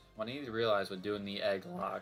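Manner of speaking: voice cracking. Mid-explanation, repeating the sentence, with a voice crack. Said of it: "that voice crack".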